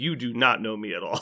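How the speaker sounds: plain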